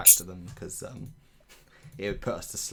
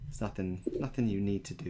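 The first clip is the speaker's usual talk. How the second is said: ordinary talk, nothing marked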